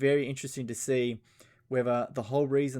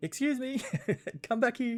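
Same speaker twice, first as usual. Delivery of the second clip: mock very high, indignant, angry yell; 12 semitones higher than usual. Describing queue-jumping videos, imitating people who get angry. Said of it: "the people that just get angry, being like".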